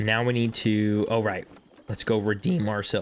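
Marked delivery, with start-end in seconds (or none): 1.9-3.0 voice cracking. Playing a game and saying what to do next, voice cracking. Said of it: "Excuse me, Mister Voice Cracker".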